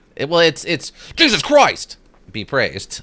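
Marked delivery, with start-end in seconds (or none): 1.2-3.0 heavy stress on "Jesus Christ". Explaining how the phrase has to be said, strong stress on Jesus Christ. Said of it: "You have to you have to really emphasize that first the first two words".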